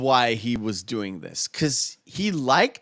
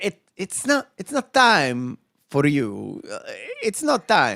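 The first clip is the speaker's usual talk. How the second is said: fake, animated, sing-song Italian accent; 3 semitones higher than usual. Recounting a reply, the speaker slips into a put-on Italian accent. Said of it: "my Italian accent".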